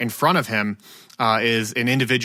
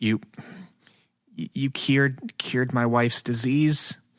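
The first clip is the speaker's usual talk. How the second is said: quiet, hesitant, stumbling, sheepish mutter under breath; 4 dB quieter than usual. Voicing a sheepish human answering the chancellor: quiet, under the breath. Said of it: "kinda quietly says under his breath".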